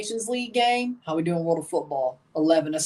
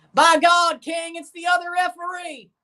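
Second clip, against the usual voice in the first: very high, clumsy, poorly done announcer voice; 11 semitones higher, 4 dB louder than usual. Joking that the referee returns like in wrestling: bad Jim Ross impression. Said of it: "It's a really bad Jim Ross impression".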